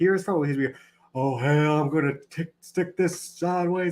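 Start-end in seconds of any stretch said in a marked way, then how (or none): 1.2-3.9 put-on, slow wrestler-style voice. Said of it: "he tries to talk like he's the mixture".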